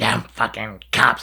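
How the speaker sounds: mock furious, angry outburst. Retelling a woman's reaction after cops kept her license, imitating a furious outburst. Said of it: "she's all pissed, like like like oh so mad".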